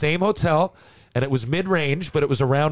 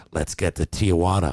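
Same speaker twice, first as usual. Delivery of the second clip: voiced stage half-whisper; 10 semitones lower than usual. Retelling what a veteran half-whispered after three beers: imitating a half-whisper. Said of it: "Cirque whispers to me".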